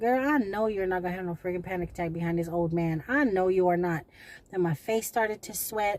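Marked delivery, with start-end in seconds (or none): none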